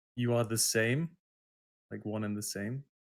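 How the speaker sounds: no-nonsense, stern, severe tone. Player in combat mode with a shotgun, confronting a figure: stern voice. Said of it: "with a stern voice".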